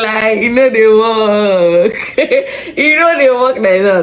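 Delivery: laughing slowly, high-pitched.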